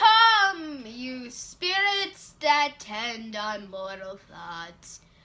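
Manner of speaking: loud, dramatic, theatrical, long drawn-out "Come". Coaching a reading of a speech, demonstrating the line dramatic, with feeling. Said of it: "give me some feeling".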